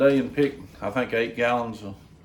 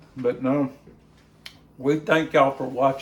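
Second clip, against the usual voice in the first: words pushed around food, talking with full mouth; 2 semitones higher than usual. Taste tester thanking viewers for watching, talking with mouth full. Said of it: "I'm sorry my mouth's full".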